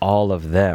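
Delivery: ordinary delivery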